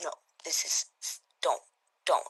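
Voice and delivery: crying, pleading, words breaking up. Telling how a woman reacted to a man's violent outburst, imitating her crying. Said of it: "She's crying, and she's saying".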